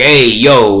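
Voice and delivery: mock gangster, exaggerated, over-the-top Italian New York accent. Reviewing a gangster movie, the speaker shows its exaggerated Italian New York accent. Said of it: "they all talk like this".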